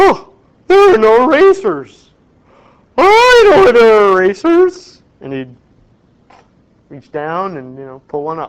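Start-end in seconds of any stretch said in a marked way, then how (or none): 0.0-5.0 shrill, loud, booming, swooping, sing-song professorial drawl. Retelling how a professor spoke on the first day: imitating a professor's way of talking. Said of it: "he used to talk like this".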